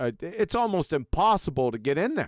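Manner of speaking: ordinary talk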